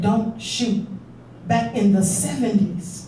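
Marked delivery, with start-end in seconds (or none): none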